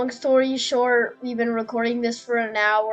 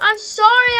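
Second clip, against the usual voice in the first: panicked voice; 12 semitones higher, 7 dB louder than usual. Apologizing to a teammate mid-game: panicking. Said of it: "I'm panicking".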